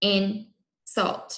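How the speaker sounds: mechanical robot voice, syllable-by-syllable. Teacher modeling a word for students to repeat, in robot talk. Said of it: "Do insult with me".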